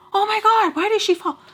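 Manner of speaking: loud, high-pitched yelling. Acting out own yelling at people who fall in videos: imitating own yelling. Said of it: "I'm yelling at people like".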